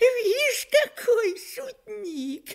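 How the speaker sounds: yelled through laughter, very high-pitched. The devil shouting at the blacksmith who grabbed his tail, shouting while laughing. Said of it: "закричал, смеясь, черт".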